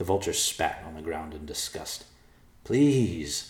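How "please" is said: pleading, imploring, begging tone. A character pleads with a vulture who has refused, begging. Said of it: "Evercloud begged".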